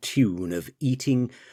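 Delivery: plain reading voice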